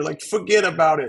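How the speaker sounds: put-on New York accent. Telling little Mike what he would say, New Yorker voice. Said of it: "in the whole like New Yorker voice".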